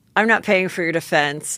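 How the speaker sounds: ordinary talk, nothing marked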